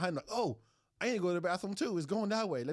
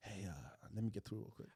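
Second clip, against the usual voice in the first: soft, close-in whisper; 10 semitones lower, 12 dB quieter than usual. Acting out a stranger at a bar asking to get past: put-on whisper in the ear. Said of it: "what if it whispered in your ear".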